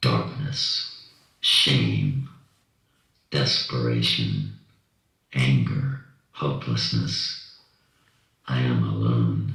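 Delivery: digitally disguised, electronically altered voice. Previewing for listeners how the story's voice will sound, electronically altered voice. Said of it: "the voice has been altered".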